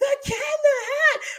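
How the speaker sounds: put-on shrill, very high, very loud childish scream. Recalling seeing something on screen as young children: retelling childhood screaming. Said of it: "we just start screaming".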